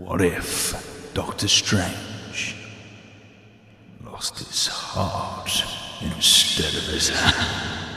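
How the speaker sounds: hushed, breathy whisper with an echo effect. Urged to do the echo, the speaker repeats the question in an echoey voice. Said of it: "That was so echoey".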